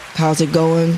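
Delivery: dead level monotone with no lift at all. Retelling how a man she calls Mister Rude greeted people: Mister Rude's monotone. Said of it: "he was so monotone".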